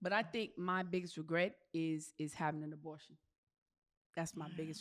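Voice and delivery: soft voice, fighting off emotion. Sharing a biggest regret with the group, holding back emotion. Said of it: "try and say this without getting emotional".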